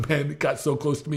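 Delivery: ordinary talk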